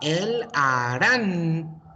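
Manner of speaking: voice rises on the stressed syllable of Arantano. Asking why the voice goes up, saying el arantano with pitch rise on its stressed syllable. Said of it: "Why am I going up a little bit here?".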